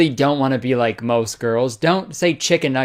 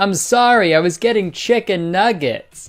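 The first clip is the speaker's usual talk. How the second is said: put-on, blurted half-shout, mild and pitched up; 6 semitones higher than usual. Acting out running late into a wedding: yelling. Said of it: "I will run in yelling".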